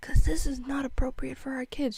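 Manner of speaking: put-on whisper. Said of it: "I just whisper".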